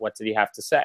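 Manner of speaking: eerily calm, soft, composed, hushed voice. Comparing parents' quiet scolding to a scene, imitating Cersei's calm, hushed voice. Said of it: "like in a calm, hushed voice".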